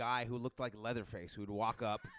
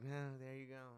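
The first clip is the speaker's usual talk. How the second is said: put-on embarrassed, sheepish, awkward manner; 9 dB quieter than usual. Retelling handing over food after being caught yelling: imitating own embarrassed greeting. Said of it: "embarrassingly roll down the window and hand her her food".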